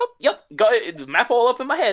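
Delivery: swooping, very high, very loud newsboy voice. Voicing the driver Ruby answering a player: newsboy type voice. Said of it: "a newsy boy type".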